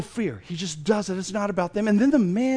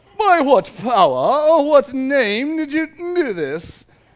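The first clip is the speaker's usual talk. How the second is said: put-on high, raised know-it-all accent; 5 semitones higher, 6 dB louder than usual. Retelling the council questioning Peter and John: smart-sounding accent. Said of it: "it has to be that kind of a voice".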